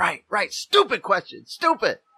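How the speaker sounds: overexcited, swooping scolding tone. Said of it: "he's just overly excited".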